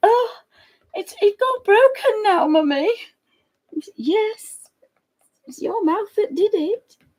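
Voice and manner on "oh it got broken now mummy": sorry, sorrowful, sad little dog voice. Describing the dog running around after breaking its favourite thing, imitating a sad dog. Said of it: "he's running around then like".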